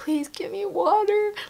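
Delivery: very high, trembling, shaking voice. The speaker re-enacts asking someone for water, retelling a shaking voice. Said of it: "my voice was shaking like this".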